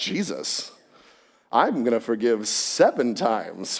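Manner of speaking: slow, mock smug, very self-satisfied tone. Imitating Peter asking about forgiving seven times: imitating Peter asking smugly. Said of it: "I imagine him asking that very smugly".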